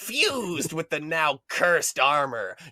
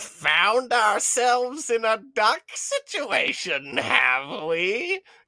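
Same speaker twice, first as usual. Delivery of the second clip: very slow, creaky, creaking wooden tree voice; 7 semitones higher than usual. Reading a story aloud, a willow speaks from behind the bench: creaking wooden voice. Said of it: "creaked a wooden voice".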